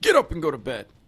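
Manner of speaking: high, very, very stern yell. Recounting yelling at a girl asleep on the couch: retelling a very stern yell. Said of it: "I yelled at her in a very, very stern voice".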